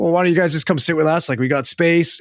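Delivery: plain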